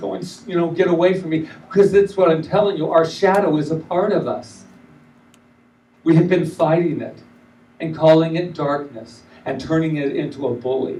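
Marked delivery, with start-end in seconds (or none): 0.7-1.5 mock baby screaming and crying, pitched higher. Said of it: "and he's screaming".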